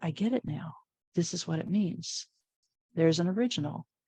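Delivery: ordinary talk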